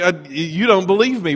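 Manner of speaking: plain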